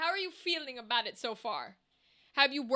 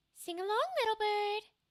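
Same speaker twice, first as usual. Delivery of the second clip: high, soft, nasal voice; 7 semitones higher, 3 dB quieter than usual.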